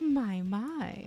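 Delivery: creepy, leering, predatory tone. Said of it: "do you have to sound like a sexual predator".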